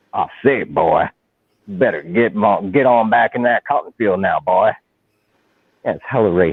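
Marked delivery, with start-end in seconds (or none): 0.1-4.7 Southern cartoon rooster voice. Criticizing cartoon stereotypes, quoting the rooster calling people boy, Foghorn Leghorn voice. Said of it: "clearly from the South".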